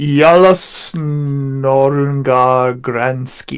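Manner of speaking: Swedish words pronounced with a German accent. Reading out a swedish name, in a german accent. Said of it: "read Swedish in a German accent".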